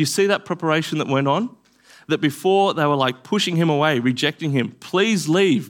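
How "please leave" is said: earnest, imploring, begging tone. Acting out people begging him to leave: imitating begging.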